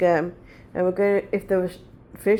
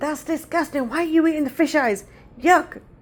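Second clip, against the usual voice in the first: put-on child's loud yell, higher; 8 semitones higher than usual. Retelling her outburst as a child at a fish shop: imitating own childhood shout. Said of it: "At the top of my voice".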